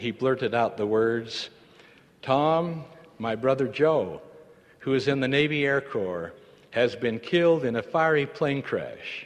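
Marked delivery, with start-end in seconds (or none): none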